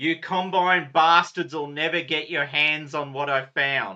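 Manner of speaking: loud, full-throated yell at the top of the voice. Narrating a game session, voicing a stranger who yells at the players: yelling at the top of their voice. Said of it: "at the top of their voice yell out".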